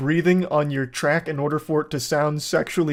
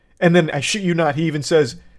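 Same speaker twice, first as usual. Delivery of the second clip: plain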